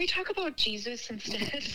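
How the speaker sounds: tiny, small, diminutive little voice. Retelling what she said at dinner during talk about war, in her little voice. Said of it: "in like her little voice".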